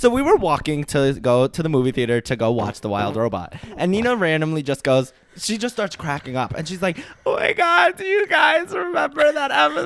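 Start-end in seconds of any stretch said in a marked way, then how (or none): 7.2-9.9 mock, very high, weepy crying wail. Retelling what Nina said on the way to the movie theater, imitating Nina crying. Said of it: "Why do you make me sound like I'm crying?".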